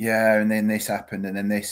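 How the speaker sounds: level, expressionless voice. Imitating a manager's press conferences: monotone Liam Manning impression. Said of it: "but it was just so monotone".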